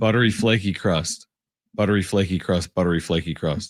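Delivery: fast, rattled-off, rapid-fire repetition. Taking up the challenge to say a phrase three times fast. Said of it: "Can you say that three times fast?".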